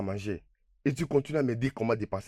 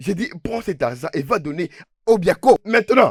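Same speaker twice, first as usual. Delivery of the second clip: shrill, very loud, high shout; 7 semitones higher, 11 dB louder than usual. Repeating an order after a refusal, shouting. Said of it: "Mais pourquoi tu cries?".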